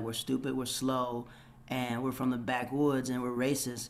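plain

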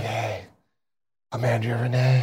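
put-on raspy woman's voice. Describing how a woman has sounded the last couple days, imitating raspy vocal fry. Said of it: "she has that rasp to her".

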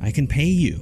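high, trembling, shaky voice. Marvin shoots back at Miguel's men shouting from above, voice shaking. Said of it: "his voice shaking".

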